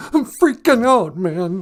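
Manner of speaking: put-on timid lion character voice. Calling into the show in character as the Cowardly Lion. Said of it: "it's me, the Cowardly Lion".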